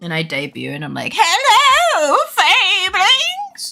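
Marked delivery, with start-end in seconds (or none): 1.1-3.7 pretend old grandma voice. Imagining a debut as an old grandma model: put-on old grandma voice. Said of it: "I'm working on my grandma voice".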